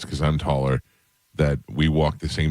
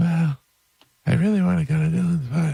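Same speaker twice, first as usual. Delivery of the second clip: very high, rough, creaky put-on voice; 14 semitones higher than usual. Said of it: "That's exactly what she sounded like".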